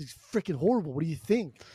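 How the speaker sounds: mock rude, snippy, mouthy back-talk with attitude. Retelling how Napoleon answered his grandma: imitating Napoleon's rude tone. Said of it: "watch your tone".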